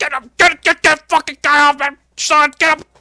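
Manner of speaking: mock seething, furious yell, very high. Retelling a wrestling scene where a man is tackled: imitating angry Vince McMahon. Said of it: "And Vince looks pissed".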